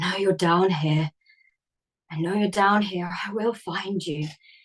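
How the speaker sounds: hoarse, faint whispering. Storyteller voicing the diggers muttering to themselves, in a faint, hoarse whisper. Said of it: "in this sort of faint, hoarse whisper".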